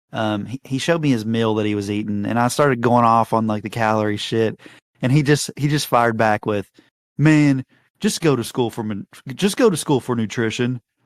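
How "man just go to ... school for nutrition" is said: snarky, sarcastic voice with swooping pitch. Retelling a friend's reply after being lectured about calories: imitating Don's sarcastic tone. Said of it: "Like, in a sarcastic way".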